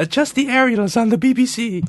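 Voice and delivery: very high, lofty, regal royal voice. The speaker does an impersonation of the Queen: Queen impression. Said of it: "That was my impersonation of the Queen".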